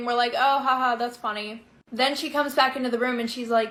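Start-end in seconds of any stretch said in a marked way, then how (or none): none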